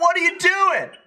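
high-pitched calling voice.

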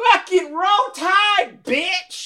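booming, very high, slow, drawn-out scream. Retelling a guy screaming out over a soft moment: retelling a loud scream. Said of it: "as loud as you can imagine".

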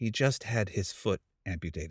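confidential, hushed, quiet stage whisper aside. Retelling what a woman beside a hospital bed told him: imitating a half-whisper. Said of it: "she whispers to me".

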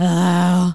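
groggy, just-woken-up voice.

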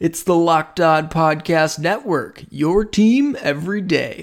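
announcer-style reading. A host imitating the voice at the start of the show: Locked On Podcast Network intro voice. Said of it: "my impression of the voice thing that goes at the beginning".

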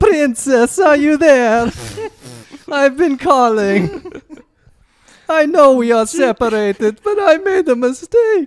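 put-on sloppy drunk voice, very high, shrill and loud. Acting out a scene of the husband calling the princess: drunk Mario voice. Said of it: "Mario's drunk later".

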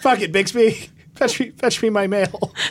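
high-pitched, barking mock yell. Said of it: "yelling at a butler".

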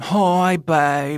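imitated British accent. Repeating a ghost's words heard on a recording, in a british accent. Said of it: "it's very like a British accent".

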